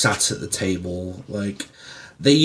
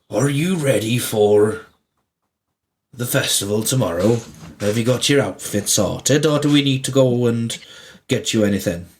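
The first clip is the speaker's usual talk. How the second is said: put-on Welsh accent, old grandfather voice; 2 semitones higher than usual. Playing a grandfather speaking to a grandchild in a scene: welsh accent. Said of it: "Why is he Welsh?".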